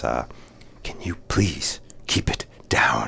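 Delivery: play-acted slow, seething, hushed whisper through clenched teeth. Retelling what the speaker's mom said when things got loud, imitating gritted teeth. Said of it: "through gritted teeth".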